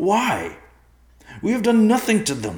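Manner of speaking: shrill, very high, very loud crying out. Narrating a character's reply to another's calm explanation, crying out. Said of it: "Riverpaw cried".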